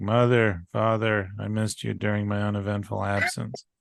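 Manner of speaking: flat deadpan. Recapping a segment where Bart speaks to his parents, deadpan Bart line. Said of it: "Like complete deadpan".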